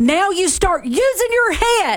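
angry shouting. Scolding a player for throwing home and losing the lead, yelling. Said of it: "you were yelling at me".

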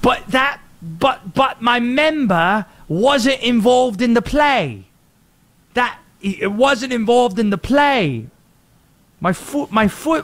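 put-on thick English accent. Acting out a player protesting an offside call: thick English accent. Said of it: "in a thick English accent".

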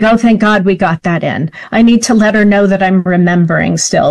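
normal talking voice

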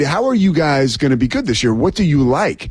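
plain

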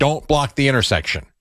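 ordinary talk, nothing marked

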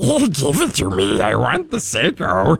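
high, drawn-out, swooping, possessive, grasping creature voice. Retelling wanting to keep a watch on, in a Gollum voice. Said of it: "very much like Gollum and My Precious".

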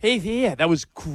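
put-on lisping voice. Recalling a workout-guy movie role, imitating Sean Astin's lisp. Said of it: "And his lisp".

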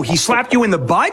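ordinary delivery

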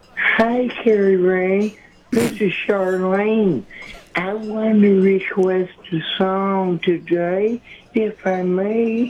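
goes right up into high female falsetto. Asked by another speaker to do a female voice: falsetto Charlene voice. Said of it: "put this falsetto voice and act like you was talking to a woman".

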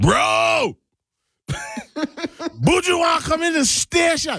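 high, slow, panicked yell.

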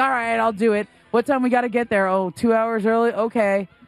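ordinary talk, nothing marked

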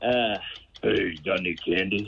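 put-on deep voice of a kid. Answering a quiz question on how a deep-voiced kid sounds trick-or-treating. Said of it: "What would a kid with a deep voice sound like trick-or-treating?".

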